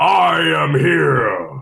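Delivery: loud, gruff, rough-edged heroic booming voice. Asked to give the catchphrase, doing a gruff All Might impression. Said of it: "a gruffer version of All Might".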